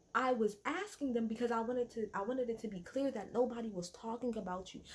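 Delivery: ordinary talk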